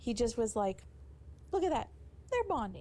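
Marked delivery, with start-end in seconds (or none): 1.5-2.8 put-on very high-pitched, happy, delighted little-kid voice. Recounting how Dominik Mysterio said it, imitating him like a happy little child. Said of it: "he sounded like a little child happy that he was getting his ice cream bar".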